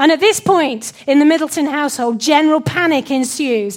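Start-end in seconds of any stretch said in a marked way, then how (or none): none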